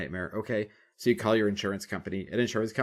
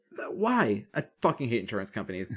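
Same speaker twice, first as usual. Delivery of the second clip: ordinary delivery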